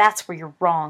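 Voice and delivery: low, loud snarling voice. Narrating a story, voicing a character snarling at another. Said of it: "Snape snarled".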